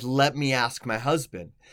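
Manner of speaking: imitated, put-on deadpan delivery. Retelling a customer's reply at the drive-thru window: imitating a deadpan reply. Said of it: "deadpan look".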